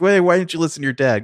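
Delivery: put-on mother voice, high-pitched yelling. Retelling a movie scene where the wife yells at the son: imitating someone yelling. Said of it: "and then she yells".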